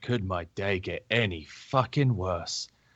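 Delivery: muttered under breath in character voice. Voicing a character who sees someone approaching, muttering under his breath. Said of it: "under his breath, he's like".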